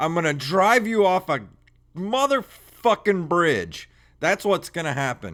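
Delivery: high, seething, fed-up, furious outburst. Ranting at a broken car over a repair bill, angry rant. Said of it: "I'm so angry right now".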